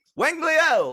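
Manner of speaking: acted loud call. Telling how a daughter shouts out a name, retelling a shouted name. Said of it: "she shouts out".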